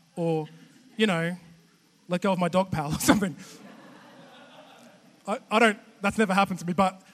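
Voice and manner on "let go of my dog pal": usual speaking voice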